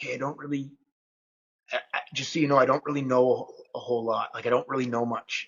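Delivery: put-on whispering. Retelling how a new student spoke while circling a practice partner: imitating a whisper. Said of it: "he kinda whispers to him, like".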